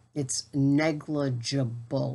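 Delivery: slow, careful, deliberate, every syllable placed. Speaker saying a word slowly so it comes out right, said slowly. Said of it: "I'd have to say that slow".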